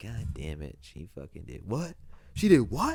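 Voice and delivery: spat-out, outraged disbelief.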